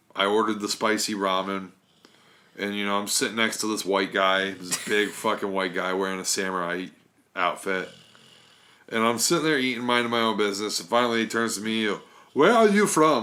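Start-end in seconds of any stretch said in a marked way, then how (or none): 12.4-13.3 poor, raised, high-pitched German accent attempt. Retelling what the big guy beside him at the ramen place asked, attempted German accent. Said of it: "I can't do a German accent".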